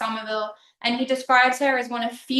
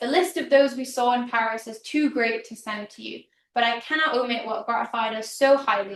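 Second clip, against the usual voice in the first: usual speaking voice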